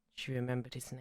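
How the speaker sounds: imitated quiet sad voice. Retelling a Doctor Who scene, quoting Donna's mum, imitating a quiet sad voice. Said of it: "says really quietly, she goes, really sadly".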